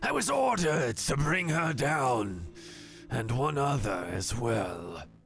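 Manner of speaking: hissing monster voice, swooping in pitch. Narrating a creature answering the players' challenge, hissing. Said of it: "He hisses out at you".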